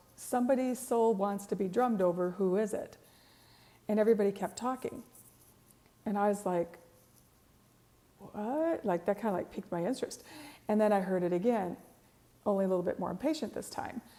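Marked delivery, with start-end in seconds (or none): none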